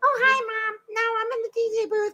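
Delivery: very high, squeaky chatter. Retelling a woman answering her mom's call, imitating a squeaky voice. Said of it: "that's a real".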